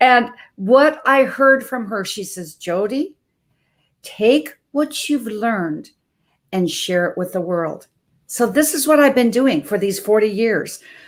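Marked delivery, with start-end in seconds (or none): 2.6-7.9 imitated, put-on Norwegian accent. Quoting what a woman said to the speaker, in her norwegian accent. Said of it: "in her Norwegian accent".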